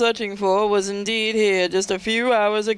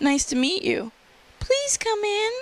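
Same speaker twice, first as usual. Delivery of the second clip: put-on very high, swooping, sing-song girl's voice; 11 semitones higher than usual. Playing Jacqueline welcoming Elise Sanders in, Jacqueline character voice. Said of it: "I'm just gonna use that voice".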